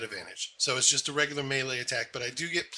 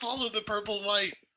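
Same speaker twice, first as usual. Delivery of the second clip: shouted callout, higher in pitch; 8 semitones higher than usual. Calling out in character to the group: yelling a callout. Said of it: "I yell out".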